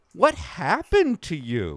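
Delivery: genuinely concerned, swooping tone. Rephrasing a question to sound less judgmental, in a concerned tone. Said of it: "Now you sound concerned".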